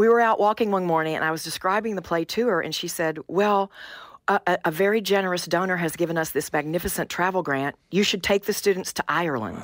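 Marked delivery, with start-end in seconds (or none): none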